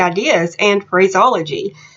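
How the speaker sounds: normal talking voice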